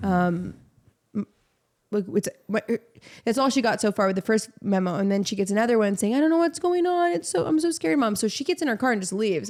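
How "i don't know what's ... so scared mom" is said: put-on high, crying, tearful, frightened child's voice. Retelling a daughter's phone message about a school scare: imitating a crying scared child. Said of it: "her daughter's crying, saying".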